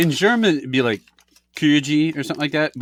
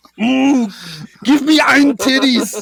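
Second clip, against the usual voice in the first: put-on angry German soldier voice; 9 semitones higher, 6 dB louder than usual. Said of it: "Say it in an angry German soldier voice".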